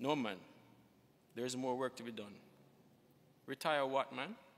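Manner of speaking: ordinary delivery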